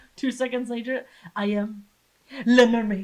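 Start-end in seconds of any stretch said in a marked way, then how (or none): 1.4-3.1 loud, grand, put-on Spanish accent. Retelling a past moment, speaking in a Spanish accent. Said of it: "What's that accent you have?".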